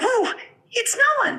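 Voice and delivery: put-on squeaky little mouse voice. Asked to make it squeakier, redoing the line in a squeaky tiny mouse voice. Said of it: "make it a little squeakier".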